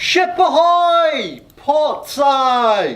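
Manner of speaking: very high, shrill, loud ringing cry, "ahoy" stretched. Telling the story, the crow's nest lookout calls out to the ship, calling out loudly. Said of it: "calls out in a loud voice".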